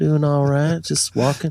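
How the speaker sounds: put-on slow Southern American drawl. Joking about picking up the local way of talking: put-on slow southern drawl. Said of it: "slow down".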